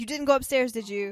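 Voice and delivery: mock, put-on, super excited speech. Retelling a story, voicing a woman questioning another woman: retelling a super excited question. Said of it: "she's still super excited".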